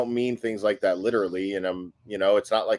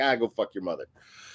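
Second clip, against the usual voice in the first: mock dismissive, waving-off brush-off; 4 dB quieter than usual. Retelling own go-to reply to an insulter: imitating a dismissive retort. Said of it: "when I'm dismissive of someone who's insulting me".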